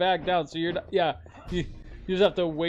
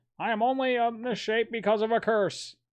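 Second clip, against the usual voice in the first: put-on old newsreel announcer voice, higher pitch; 5 semitones higher than usual. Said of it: "Why does he sound like Walter Winchell?".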